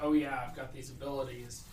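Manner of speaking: usual speaking voice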